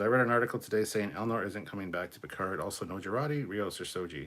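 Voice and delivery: ordinary talk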